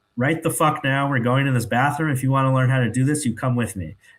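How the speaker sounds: put-on firm, stern, no-nonsense commanding tone. Retelling a nurse ordering people to a bathroom: imitating a stern nurse. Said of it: "very, you know, stern about this".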